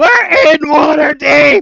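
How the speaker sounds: full-volume, very high, shrill shriek. Retelling how a player at the table screamed at the others: imitating a player screaming. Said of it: "slams her fists on the table and stands up and just screams".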